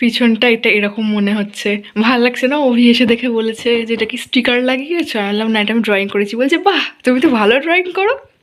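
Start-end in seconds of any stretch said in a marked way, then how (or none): 6.7-8.1 put-on affected tone, much higher pitch. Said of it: "তাও ঢং করে বলেছে".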